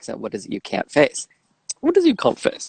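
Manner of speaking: put-on British-accented delivery. Describing a remixed video clip, quoting the nun's line; British accent. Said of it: "her saying in her British accent".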